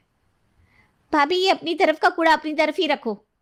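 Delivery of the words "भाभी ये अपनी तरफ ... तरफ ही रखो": high-pitched, fake, mock quarrelling tone. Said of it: "आपस में झूठी लड़ाई करती हैं".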